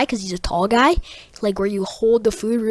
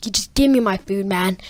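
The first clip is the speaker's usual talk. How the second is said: ordinary talk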